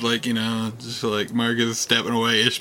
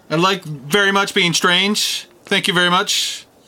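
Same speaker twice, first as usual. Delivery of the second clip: high, loud yelling in character; 8 semitones higher, 4 dB louder than usual. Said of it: "because I'm yelling".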